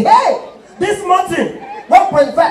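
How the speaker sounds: high, loud, slow mocking yell.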